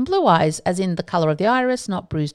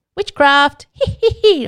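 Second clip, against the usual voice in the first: deliberately bad, high, loud, put-on cackling witch voice; 8 semitones higher, 7 dB louder than usual. Speaker talking about heterochromia and witch trials, doing a bad cackling witch impression. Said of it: "I'll just stop".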